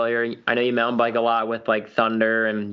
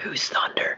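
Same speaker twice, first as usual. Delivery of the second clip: close, intimate whisper. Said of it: "He's whispering in my ear".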